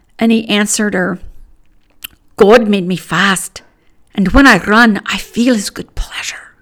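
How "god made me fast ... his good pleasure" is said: loud, raised Scottish brogue. Quoting Eric Liddell's answer to his little sister, the speaker uses a Scottish brogue. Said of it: "That was my Scottish brogue".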